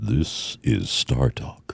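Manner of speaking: overdone, forced deep voice, breathy. Trying the show intro as asked, in a forced deep voice. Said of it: "you're trying too hard there".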